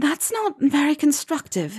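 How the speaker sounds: very high, a little out of breath. A woman answers from near the man's knee, a little breathless. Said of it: "a little breathlessly".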